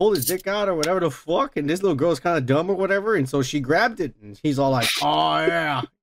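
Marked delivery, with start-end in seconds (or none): 5.0-5.8 put-on growly wrestling-boss voice, pitched lower. Retelling a workplace story, doing Vince McMahon: Vince McMahon impression. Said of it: "that's how he sounds".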